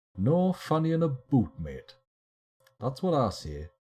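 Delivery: clumsy, poor attempt at a Newcastle Geordie accent. While discussing digging progress, the speaker drops into a bad Newcastle accent. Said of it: "I attempted a Newcastle accent there".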